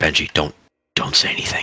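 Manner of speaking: hushed whisper, under the breath. Sneaking up on Benji during a rescue and warning him, whispering. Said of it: "I begin to whisper".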